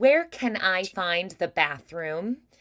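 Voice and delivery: smiley, bright, forward standard American accent. Demonstrating asking where the bathroom is, in a bright standard American accent. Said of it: "If I was saying it with that standard American, ... More bright, forward, smiley".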